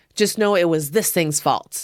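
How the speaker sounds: normal talking voice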